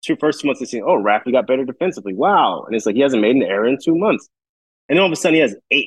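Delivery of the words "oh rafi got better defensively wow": usual speaking voice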